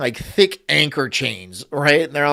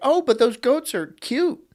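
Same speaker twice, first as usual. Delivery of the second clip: put-on very high, sneering, mocking female voice; 9 semitones higher than usual. Imitating an imagined woman who objects: mocking imitation of a woman. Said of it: "She'd be like".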